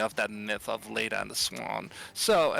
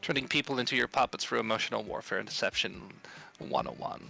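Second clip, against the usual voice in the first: normal talking voice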